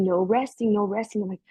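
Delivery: plain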